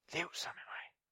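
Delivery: gentle, soft, unvoiced whisper.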